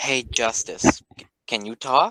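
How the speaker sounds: faltering, soft, hushed whisper. Talking to a sword on the table in character: whisper. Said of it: "I'm going to whisper to it".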